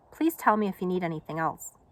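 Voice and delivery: ordinary delivery, nothing marked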